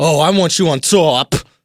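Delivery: put-on slow Boston accent. Retelling what a guy said to the group: imitating a Boston accent. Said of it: "and he has a Boston accent".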